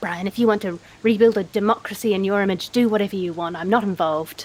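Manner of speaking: very low, grumbling mutter. Leaving the town square toward the church, muttering to Brian: muttering under breath. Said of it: "I'm gonna mutter under my breath".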